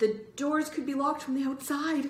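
whispered, hesitating. Greg, at the double doors with Bird, whispered, hesitating. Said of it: "Greg whispered, hesitating".

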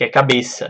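ordinary talk

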